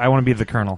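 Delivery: ordinary talk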